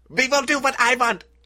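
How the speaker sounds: put-on German accent. Acting out a professor in a retold story, in a German accent. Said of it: "I don't know why he's German now".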